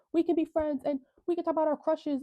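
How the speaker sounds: put-on scream. Retelling a fight scene, a character screaming at Toga: retelling a scream at Toga. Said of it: "screaming at Toga".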